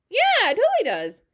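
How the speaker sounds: usual speaking voice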